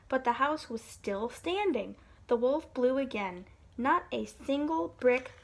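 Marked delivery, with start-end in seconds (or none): none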